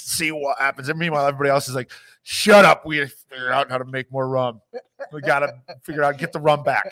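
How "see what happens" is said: put-on Cockney accent, clergyman voice. Describing a British clergyman character and voicing his line: Cockney accent. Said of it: "I don't know why he has a Cockney accent".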